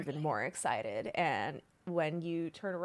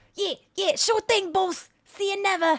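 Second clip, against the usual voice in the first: very high-pitched, very loud goblin creature voice; 10 dB louder than usual. Voicing a goblin answering the party: goblin voice. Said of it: "you hear".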